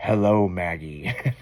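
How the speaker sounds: eerie, creepy talking-skeleton voice. Imitating the talking yard skeleton greeting a neighbor: creepy skeleton voice. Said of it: "And that creepy voice too".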